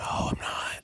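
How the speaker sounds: speaking in a whisper. Denying being a Trump supporter when asked on stream: whispering. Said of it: "why are you whispering?".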